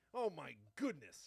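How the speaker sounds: put-on rambunctious young boy voice, old-fashioned. Showing the voice done for a child: old-timey rambunctious young boy voice. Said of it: "a rambunctious young boy from some day gone by".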